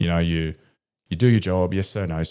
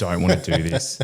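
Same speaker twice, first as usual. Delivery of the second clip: mock tearful pleading voice. Retelling a first phone call home to mum and dad: retelling own tearful plea. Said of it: "bursting into tears and just being like".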